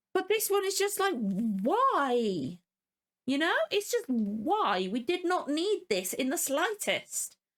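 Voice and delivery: annoyed and high pitched. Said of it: "fucking annoyed by it".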